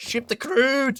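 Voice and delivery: weird, very high, loud hillbilly American accent. Celebrating a finished railway line, in a weird hillbilly American accent. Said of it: "weird hillbilly American accent".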